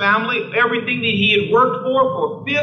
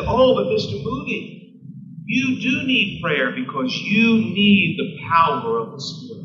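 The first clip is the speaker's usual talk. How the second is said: put-on unhurried, gentle, slow, kindly old-lady voice. Retelling an old lady's reply to a man refusing prayer, imitating her gentle answer. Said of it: "very gently said".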